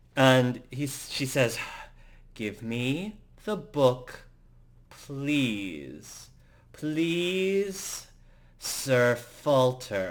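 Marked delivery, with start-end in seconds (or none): 2.4-10.1 ground out very slowly through clenched teeth. A character speaking to a man she is staring daggers at, through gritted teeth. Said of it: "Lauren says with gritted teeth".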